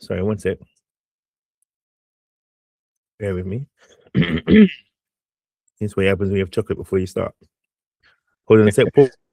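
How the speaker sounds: spluttering, coughing speech through a choke. Pausing mid-talk to recover after choking on chocolate: choking on food. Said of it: "Sorry, I'm choking here".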